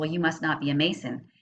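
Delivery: normal talking voice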